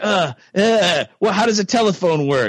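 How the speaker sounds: put-on bumbling detective voice. Mocking how the detective talks: Columbo impression. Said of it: "Columbo, all he does is just like".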